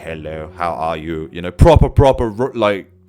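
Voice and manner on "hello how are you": mechanical, robotic AI voice. Imitating an early ai that could barely string sentences: robotic ai voice. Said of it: "proper, like, A I robot".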